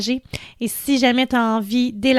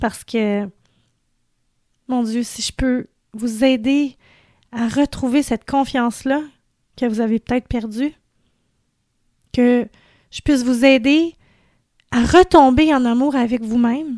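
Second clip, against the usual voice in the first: teary, emotional voice, close to tears. Thanking the community for believing in the message: teary, emotional voice. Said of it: "J'ai les larmes aux yeux".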